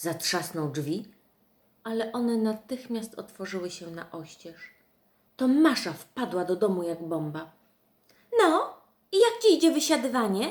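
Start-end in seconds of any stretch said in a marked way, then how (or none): 8.4-10.5 loud, high-pitched, sudden bursting exclamation. Reading a story aloud, voicing her line as she bursts in, exclaiming. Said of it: "Wykrzyknęła".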